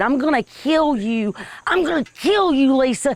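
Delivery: high, mild yell. Retelling what one person kept screaming at another, imitating someone screaming. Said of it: "Sharon was screaming at Lisa".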